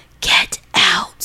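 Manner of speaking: hushed whisper, close to the ear. Reading an email aloud, the line a voice said in her ear: whispered. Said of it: "I hear a man's voice whisper in my ear".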